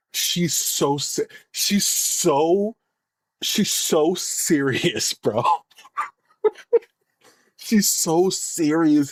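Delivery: slow delivery, laughter held back and stifled. Reacting to a video of a serious speaker, trying not to laugh. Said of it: "I'm trying not to laugh".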